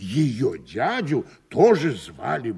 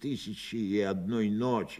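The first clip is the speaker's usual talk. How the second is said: plain reading voice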